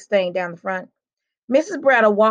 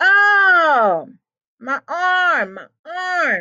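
fake pained shout, high, slow, very drawn out; 9 semitones higher than usual. Link, acting hurt after grabbing his shoulder, shouts in faked pain. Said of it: "he shouted".

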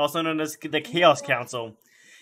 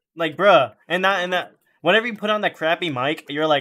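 plain

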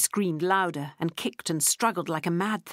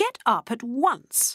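furious exclamation, each word very slow; 6 semitones higher than usual. A woman holding a box speaks to a refusing child, angrily. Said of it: "exclaimed Lottie angrily".

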